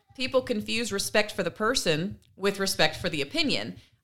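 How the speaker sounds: ordinary talk, nothing marked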